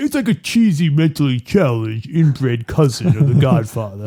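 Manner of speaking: mumbled with the jaw pushed to one side. Speaking to listeners and comparing a film to The Godfather, doing a Sylvester Stallone impression. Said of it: "I'm going to give you some credit for that impression".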